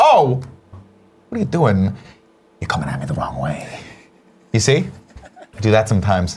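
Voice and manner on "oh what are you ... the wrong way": dropped pitch, swinging intonation. Telling how people at the airport get the Walken impression: Walken impression. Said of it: "I become walking".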